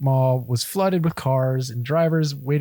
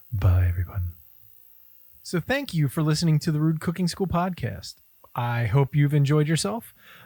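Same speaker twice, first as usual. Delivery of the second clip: faster radio announcer voice. Signing off the Rude Cooking School podcast, the host speaks in an NPR voice. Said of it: "In my NPR voice".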